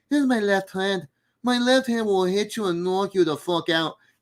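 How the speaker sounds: put-on very high-pitched voice with an Irish accent. Explaining how to learn an impression from a catchphrase, demonstrate your early Conor McGregor impression. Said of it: "when I started doing my Connor impression".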